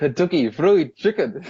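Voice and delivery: made-up, guessed-at put-on Canadian accent. Retelling a past attempt at an accent they didn't know, attempted Canadian accent. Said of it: "trying to say Kentucky Fried Chicken in a Canadian accent".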